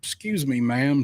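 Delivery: mock extra-polite, sweet-talking, nicest possible voice. Retelling approaching an eighteen-year-old in the next aisle, putting on nicest voice. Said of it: "nicest voice I can muster".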